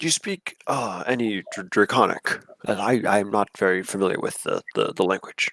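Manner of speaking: soft, hushed, secretive half-whispered aside. A player's character quietly asks another character a question, half-whispering. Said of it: "I'm going to just whisper to him".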